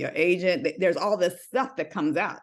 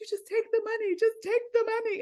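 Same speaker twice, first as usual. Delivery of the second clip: put-on tearful crying voice, higher. Retelling how she begged a bank teller to take the money: imitating crying. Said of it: "this child is crying in the bank".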